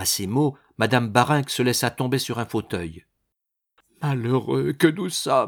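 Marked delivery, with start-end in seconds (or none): 4.0-5.5 murmuring. Sinking into an armchair at her daughter's words, murmured.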